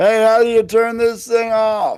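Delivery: loud, high-pitched shout. Taking a game turn in character, calling to the bartender: yelling out to the bartender. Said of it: "I'll yell out to the bartender".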